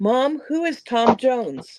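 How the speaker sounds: words blurted out suddenly. A mother retelling her daughter's question on a shuttle, retelling a loud question. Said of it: "And she says real loud".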